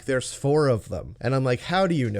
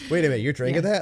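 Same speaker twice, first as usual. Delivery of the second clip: put-on suspicious voice. Retelling a scene where a character questions someone drinking: imitating Marilyn, suspicious. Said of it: "inappropriately suspicious of the fact that she's drinking it".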